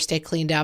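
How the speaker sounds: ordinary talk, nothing marked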